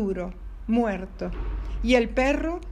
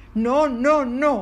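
roaring, loud bellowing; 5 dB louder than usual. The dog answers the pleading fox: bellowing. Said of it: "bramó el perro".

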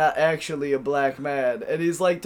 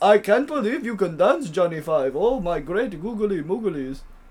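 fake, put-on Indian accent; 3 semitones higher than usual. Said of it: "and he talked like this".

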